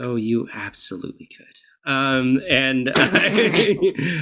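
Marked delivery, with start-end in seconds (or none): 0.0-1.9 muttered whisper, quieter. In a role-play, the speaker's character answers a man privately: whispering under breath. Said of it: "I whisper under my breath".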